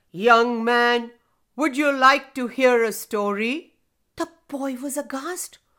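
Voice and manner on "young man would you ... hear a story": deep, low rumbling voice, louder. Narrator reading a children's story, a voice calls out to a boy: deep rumbling voice. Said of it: "a deep rumbling voice call out".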